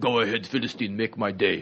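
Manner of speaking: English in a put-on Austrian accent. Picturing how he would deliver a line, in an Austrian accent. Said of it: "He'd have that great Austrian accent".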